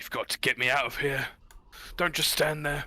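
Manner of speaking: gruff whispered dwarf voice. Narrating a scene to the players, voicing a ghost dwarf: gruff whispering ghost dwarf voice. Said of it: "this gruff, those whispering as a ghost dwarven voice".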